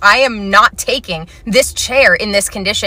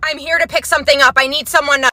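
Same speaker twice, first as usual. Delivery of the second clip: put-on high, raised yell; 7 semitones higher than usual. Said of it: "to yell at me from there".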